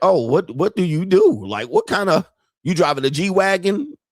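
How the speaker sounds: acted hesitant, anxious voice. Retelling how a woman questioned him: imitating someone asking nervously. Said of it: "she said it very nervously".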